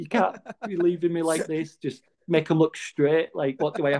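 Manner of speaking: play-acted desperate begging, high, almost crying. Retelling begging at the clinic on Christmas Eve at 18, retelling near-tearful pleading. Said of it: "just like practically crying".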